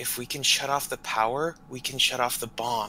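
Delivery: put-on whispering. Streamer voices what a game character will say, imitating a quiet whisper. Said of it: "he's going to very quietly whisper".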